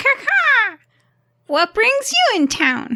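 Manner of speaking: very high, swooping, cawing crow-woman voice. Voicing a crow woman the players are chatting with: crow woman voice. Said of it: "I don't know how to do a crow voice".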